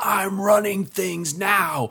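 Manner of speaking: very high, drawn-out shrieked scream. Retelling a play's climax where a character screams at her mother: imitating a woman screaming. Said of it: "she's screaming at her mother".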